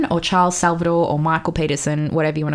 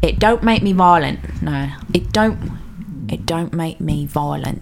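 put-on cockney tough-guy voice. Repeating a prisoner's quote in his voice: cockney hard man Charles Bronson voice. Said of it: "real, like, cockney, like, hard man".

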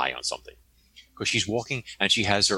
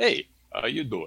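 casual, creaky, high-pitched flirty come-on tone; 5 semitones higher than usual. Retelling greeting a naked woman on the street: Joey Tribbiani pickup line. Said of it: "like Joey Tribbiani or something".

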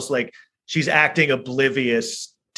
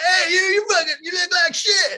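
in-your-face, blunt, insulting tone, pitched up very high. Contrasting two comedians' insult styles, imitating Chris Rock. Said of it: "Chris Rock comes out, he's like".

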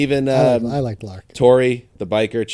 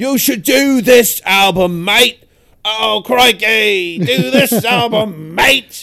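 put-on drunk man voice, London accent; 11 semitones higher, 6 dB louder than usual. Retelling what drunk men said at London events: imitating a drunk London fan. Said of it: "drunk, uh, men come up to me and say".

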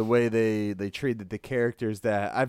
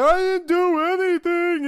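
mock very high, drawn-out, freaking-out, near tears; 7 dB louder than usual. Retelling a movie scene where Freddy is burned: imitating Freddy freaking out, almost crying. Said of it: "he's just freaking out".

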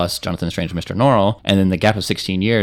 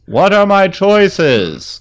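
booming, very high, swooping voice; 11 semitones higher, 6 dB louder than usual. A player in a role-play game addresses the room in a booming voice. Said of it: "I address the room in a booming voice".

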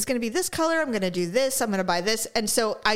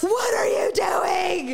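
put-on bad demon voice, much higher; 8 semitones higher than usual. Retelling confronting him after he opened the bathroom door, worst demon voice. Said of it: "in your worst demon voice".

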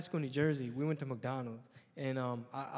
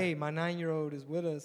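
ordinary delivery

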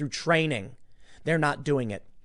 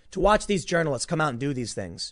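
usual speaking voice

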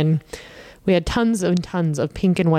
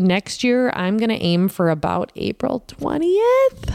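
nervous, unsure, question-like rise at end; 4 semitones higher than usual. A gardener planning next year's transplanting date, nervous, questioning. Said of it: "I say that like nervously".

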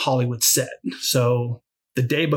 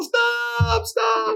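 mock yell like a young girl, much higher. Retelling the guy he towed backward, imitating a little girl yelling. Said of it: "He's yelling like a four-year-old girl".

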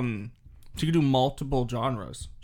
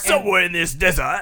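heavy-handed voice drifting into an Australian accent; 5 semitones higher, 7 dB louder than usual. Repeating a movie line when asked, imitating Jetfire: overdone Jetfire impression sounding Australian. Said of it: "You sound like you're trying to be Australian".

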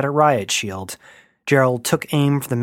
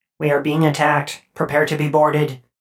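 automated computer announcement voice over comms; 3 semitones higher than usual. Narrator reading the ship's computer over the comms, in a computer voice. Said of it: "came a computer's voice on the comms".

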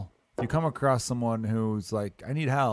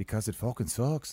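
clumsy, bad put-on Mexican accent; 4 dB quieter than usual. Joking about interview answers, bad mexican accent. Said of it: "that was a bad, I was trying to do, like, a Mexican guy".

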